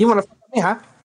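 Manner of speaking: put-on Mexican accent. Repeating a quote to try different accents, put-on Mexican accent. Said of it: "That was more Mexican".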